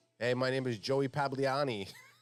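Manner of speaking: put-on Philly guy voice. Guessing what a guy's name would be, the speaker starts imitating a philly guy. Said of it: "he's definitely a Joey from Philly".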